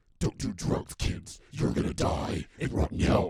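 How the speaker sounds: hellish monster voice, very loud. Warning kids not to do drugs, joking: demon voice. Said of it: "put the demon voice".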